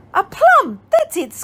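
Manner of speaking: high, squeaky little ladybug voice. Narrating the ladybug's reply after the owl's question, in a squeaky voice. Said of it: "squeaked the ladybug".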